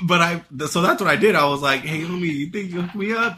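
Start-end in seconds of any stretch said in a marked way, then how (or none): 1.8-3.4 mock laid-back, casual, would-be smooth, trying-to-sound-cool tone. Retelling asking a worker for a video, imitating himself trying to sound cool. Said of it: "trying to be cool".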